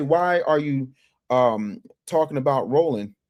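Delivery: normal talking voice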